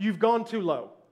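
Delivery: put-on cool as a cucumber, calm, unbothered, matter-of-fact. Retelling what the pilot said as alarms went off: imitating a calm voice. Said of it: "he's calm as a cucumber".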